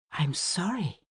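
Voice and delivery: hushed, almost whispered. Hero answers the chambermaid's account of a death, in a near whisper. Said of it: "her voice now little more than a whisper".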